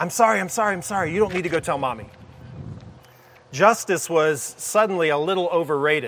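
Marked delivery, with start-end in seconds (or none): 0.0-2.1 very quick, quiet, hushed rush of words. Retelling his reply when she threatened to tell her mommy, quick and quiet. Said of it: "he said very quickly and quietly".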